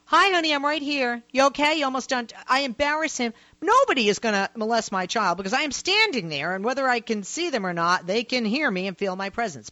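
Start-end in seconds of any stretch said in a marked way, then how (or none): 0.1-2.3 loud, high, carrying call-out yell. Retelling calling to a child in a restroom from the doorway: imitating herself yelling. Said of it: "I stand in the doorway and I yell".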